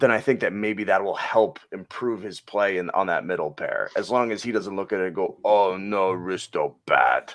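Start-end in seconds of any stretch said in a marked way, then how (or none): 5.4-7.3 very slow, caveman-style speech. Imitating a player reacting to a demotion: Neanderthal Risto voice. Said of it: "the Neanderthal Risto thing".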